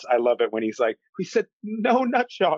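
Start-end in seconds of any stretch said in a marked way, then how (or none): 1.2-2.6 very high, cracking voice. Recounting a favorite hilarious bit after she knees him, Scott Adkins cracking voice. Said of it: "he's got that, like, cracking voice".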